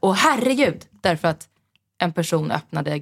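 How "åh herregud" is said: acted-out, high, frightened shriek of sudden shock. Recounting being startled when a person opened a gate, retelling a frightened scream. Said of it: "jag skrek till och bara så här".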